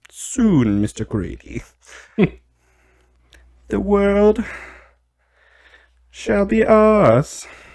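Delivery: put-on British villain accent. Voicing a dinosaur character addressing mister grady, in a british evil-guy accent. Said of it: "He's got like a British evil guy accent".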